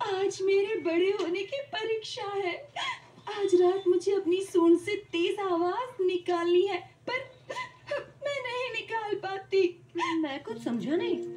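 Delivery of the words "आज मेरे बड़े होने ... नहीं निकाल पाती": weeping all the way through the words. Heeta answers someone who has asked what happened and why she is in tears, crying. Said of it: "रो क्यों रही हो?".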